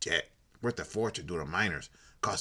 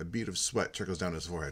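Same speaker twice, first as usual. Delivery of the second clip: plain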